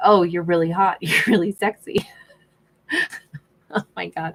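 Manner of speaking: giggling and laughing all the way through. Imagining what she'd say to him, the speaker is laughing. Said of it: "Sorry I'm laughing".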